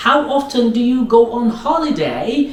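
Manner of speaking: ordinary delivery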